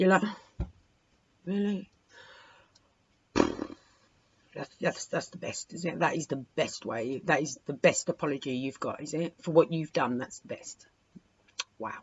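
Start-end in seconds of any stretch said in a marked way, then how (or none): 1.4-12.0 heavy, unimpressed sarcasm throughout, leaning on "wow". Acting out the listener's reaction to a poor apology: imitating a sarcastic reply. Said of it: "heavy on the sarcasm with the wow".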